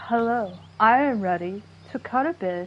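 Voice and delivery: mock menacing, threatening voice. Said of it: "she has just, like, this voice like".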